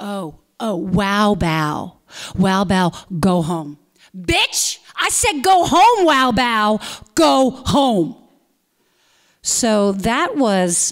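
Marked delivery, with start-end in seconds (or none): 0.0-8.2 held back, dragged, slow, taunting heckling jeer. Retelling what a young stranger yelled across the condo lobby, imitating the yell. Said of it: "who yelled that at me".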